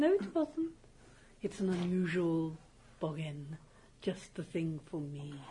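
speaks like a university lecturer. Playing a character who takes on an unusual boggin, sounding like Ermine Tree. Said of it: "Why are you sounding like Ermine Tree?".

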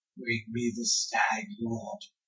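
high, very quiet, barely audible half-whisper. Voicing a creature from the water speaking to a player: half-whispering. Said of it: "he whispers to you".

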